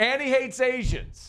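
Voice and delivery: mock outraged, high squealing voice.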